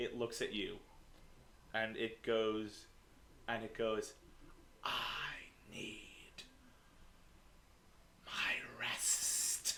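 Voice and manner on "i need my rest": menacing hissed whisper, very slow and drawn out. Describing a shadowy thing that looks at you and speaks: put-on dark hissing whisper. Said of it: "this shadowy, whispery voice that's like this hissing sound".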